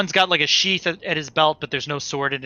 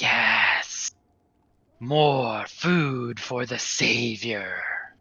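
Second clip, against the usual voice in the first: very slow, sly, roguish ghoul-like creature drawl; 3 semitones lower, 3 dB quieter than usual. Narrator voicing a ghoul coming up to the player, roguish ghoul voice. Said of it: "The roguish ghoul comes up to you".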